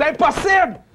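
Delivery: slow, high-pitched, drawn-out stunned disbelief. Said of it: "calme-toi, [name]".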